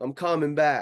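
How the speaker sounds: acted high cry. Describing calling back across an imagined bridge: imitating a scream back. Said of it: "I'm screaming back".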